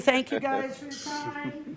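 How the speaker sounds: crying through tears. Thanking everyone for their time while leaving, crying while talking. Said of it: "As I'm crying and as I'm bawling".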